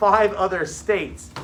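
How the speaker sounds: plain reading voice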